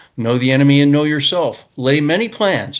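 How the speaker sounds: ordinary delivery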